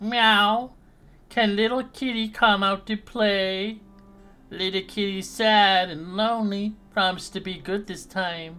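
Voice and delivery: high, shrill, loud kitty-cat mewing voice. Game master voices the voice heard behind a door, a female voice meowing like a cat. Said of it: "it sounds like it's meowing like a cat".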